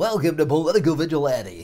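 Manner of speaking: big, loud game show host voice. Opening the show by welcoming listeners, in a game show host voice. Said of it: "game show host voice".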